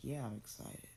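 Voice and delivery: put-on deadpan, flat, unexcited, nonchalant teen voice. Retelling a son's reply about going to a concert: imitating a nonchalant, unexcited reply. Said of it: "even though he's so nonchalant".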